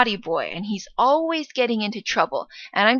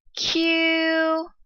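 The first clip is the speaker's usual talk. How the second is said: Q held flat in high level first tone; 7 semitones higher than usual. Retelling calling out to him from the desk: high flat first tone on Q. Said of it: "I called in a high, flat tone, and that's the first tone".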